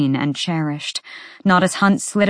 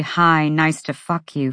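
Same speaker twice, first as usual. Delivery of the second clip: ordinary delivery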